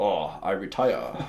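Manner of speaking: put-on Japanese accent in English. Imagining being a samurai who wants to quit, in a Japanese accent. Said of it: "That is a brilliant Japanese accent".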